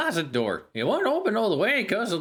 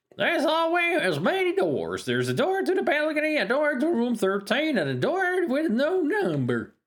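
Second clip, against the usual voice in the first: put-on pitched-up old-timer prospector voice; 6 semitones higher than usual. Reading a game's narration aloud while playing, in an old prospector voice. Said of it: "I gotta go with the old prospector voice".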